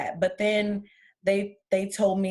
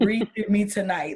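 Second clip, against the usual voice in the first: pleading, bargaining tone. Retelling a prayer made while struggling to breathe at night: retelling a pleading prayer.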